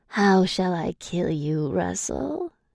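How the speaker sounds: gravelly hissing voice with swooping pitch. Reading a story aloud, a captor threatens the narrator: gravelly, hissing voice. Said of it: "he asks with his gravelly voice, hissing my name".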